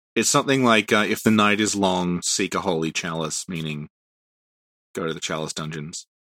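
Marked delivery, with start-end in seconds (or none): none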